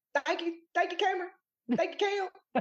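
over-the-top, exaggerated, very high voice. Thanking the other speaker in an exaggerated imitation of Cameron. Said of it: "Is that how I sound?".

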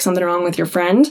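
ordinary talk

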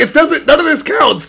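acted-out high yell, carrying. Retelling how the opponent yelled back: imitating someone yelling back. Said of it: "she just yells back".

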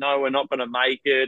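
ordinary delivery

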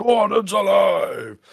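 very high, loud shouted stage cry. Retelling what Brian Blessed shouted walking on stage: imitating Brian Blessed shouting. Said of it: "it was the first thing he shouted".

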